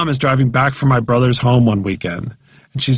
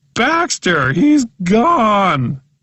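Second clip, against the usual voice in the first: put-on sobbing cry, higher; 9 semitones higher than usual. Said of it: "she says, bawling".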